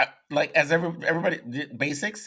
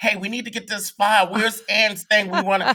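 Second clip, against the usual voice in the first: mild, toned-down, high-pitched yell; 6 semitones higher than usual. Retelling the agents demanding an audition file: imitating agents screaming. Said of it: "The agents are screaming like".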